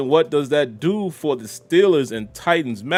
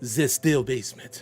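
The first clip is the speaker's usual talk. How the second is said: put-on funny accent on the word "the"; 4 semitones lower, 7 dB quieter than usual. Saying the location name, with a put-on funny accent on "the". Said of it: "I always put that funny accent on it".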